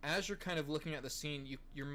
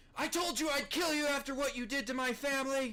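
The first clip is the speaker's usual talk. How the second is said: piercing, loud scream, very high-pitched; 11 semitones higher, 7 dB louder than usual. Voicing a captive being carted away by guards: screaming. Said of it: "that is screaming".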